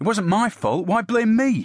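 very high, high-pitched, protesting and complaining. [name] answers Andrew, who blames him for the lost ball, complaining. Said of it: "[name] complained in return".

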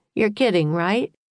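ordinary delivery, nothing marked

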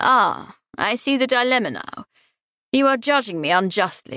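plain reading voice

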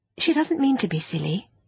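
gentle, soothing. A child answers something that mocked a friend's hat, gently. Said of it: "Anthea said gently".

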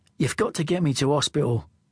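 ordinary delivery

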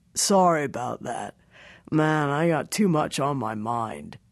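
half-stoned character voice. Narrator reads the clerk's reply after barging into his boss's office: half-stoned law clerk. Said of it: "looks half stoned. / shakes his shaved head, looks half stoned. / He sniffs, / her law clerk walks in without knocking. / looks half stoned".

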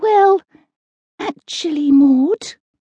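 hushed whisper. Ethel answers maud, whispering. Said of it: "whispered Ethel".

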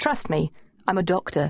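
ordinary delivery, nothing marked

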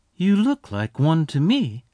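soft, quiet voice. A woman answers a rancher who denies being a cowboy, softly. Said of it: "she said softly".

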